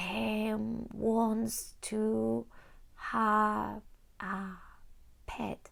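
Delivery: halting, very slow, word-at-a-time reading. Imitating a child learning to read, very slow, word by word. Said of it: "reading a text word by word very slowly".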